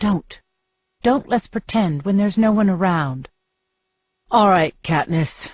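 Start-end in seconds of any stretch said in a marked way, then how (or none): 4.3-5.5 worn-out, tired, weary voice. He agrees to Katniss's request, answering tiredly. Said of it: "he says tiredly".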